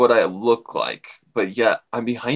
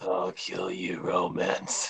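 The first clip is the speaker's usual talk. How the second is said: put-on demon voice, much lower, quieter; 4 semitones lower, 10 dB quieter than usual. Performing a line in a scene with a partner, in a demon voice. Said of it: "It's only my demon voice".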